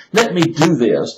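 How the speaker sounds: acted, slow, drawn-out begging plea. Acting out the servant in debt begging his master: acting out begging. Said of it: "So he's begging".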